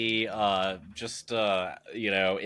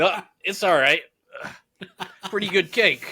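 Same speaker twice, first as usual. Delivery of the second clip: casual, high, offhand downplaying, delight barely hidden; 9 semitones higher, 6 dB louder than usual. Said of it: "I stone face it".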